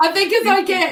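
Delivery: high, loud laughter on the edge of tears.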